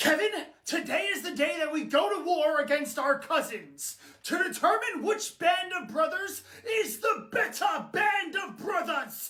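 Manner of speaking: grand, theatrical, put-on British accent. Speaking to kevin, in a dramatic british accent. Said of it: "Why are you talking with a British accent?".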